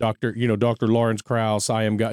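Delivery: ordinary delivery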